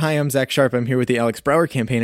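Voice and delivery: ordinary talk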